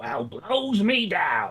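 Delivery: low, soft cartoon sailor voice. Asked if others want to hear it, the speaker does a Popeye voice. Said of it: "wants to hear me do Popeye?".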